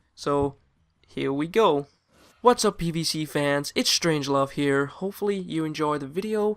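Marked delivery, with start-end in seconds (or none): 2.4-6.5 worst-ever American accent attempt. Doing someone's video intro in her accent: imitating Lauren, bad American accent. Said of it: "I'm going to try and do your accent".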